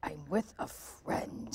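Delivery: slow, quiet mutter under the breath. Retelling how a recognized friend answered people: imitating muttering under breath. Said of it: "And under her breath".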